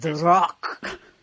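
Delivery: booming, big movie-star style voice. Announcing the episode title in a Sean Connery impression. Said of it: "here comes my best Sean Connery impression".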